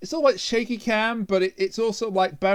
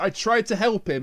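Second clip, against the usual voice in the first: ordinary delivery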